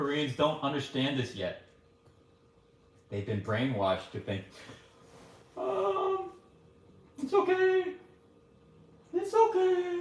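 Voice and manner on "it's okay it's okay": very high, slow, unhurried tone. Explaining his parents' views on alcohol, imitating his mom's voice. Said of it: "I use my mom's voice".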